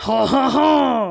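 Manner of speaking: loud, mock French accent.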